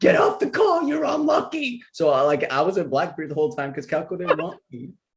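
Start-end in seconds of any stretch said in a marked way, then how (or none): 0.0-1.8 very high-pitched screaming. Recalling how someone kept yelling at them whenever they joined the call: retelling a scream. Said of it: "Calico was screaming at me".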